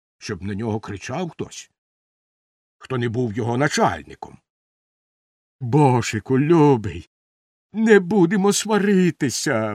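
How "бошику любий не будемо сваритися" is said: earnest, pleading, begging tone. Narrator voicing Bomshteks after Bozh-Bermak shoves him, pleading. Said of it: "благально мовив Бомштекс".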